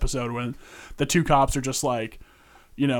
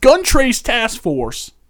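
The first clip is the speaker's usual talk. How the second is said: shrill, booming, loud, swooping Baltimore accent; 9 semitones higher, 9 dB louder than usual. Explaining what he is in charge of, roll out your Baltimore accent for the name. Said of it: "let me roll out my Baltimore accent".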